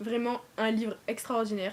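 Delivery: ordinary delivery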